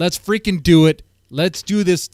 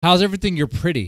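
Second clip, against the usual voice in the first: fast, rushed, rattled-off throwaway delivery. Retelling what a cashier said to Grace, said really fast. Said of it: "She says real fast".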